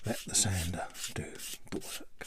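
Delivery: whispering. Showing how to sand a piece on camera: whispering. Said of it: "Don't know why I'm whispering there".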